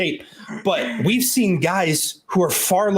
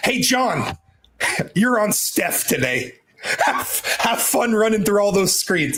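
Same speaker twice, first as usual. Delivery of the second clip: talking with words broken up by laughter; 4 semitones higher than usual. Joking about assigning a player to guard a star: laughing while talking. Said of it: "I'm laughing".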